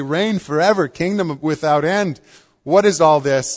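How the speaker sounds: usual speaking voice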